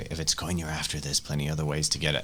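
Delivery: very quiet, hushed voice. In character, speaking to a man condemning his son to death, very quiet and hushed. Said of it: "I very quietly say".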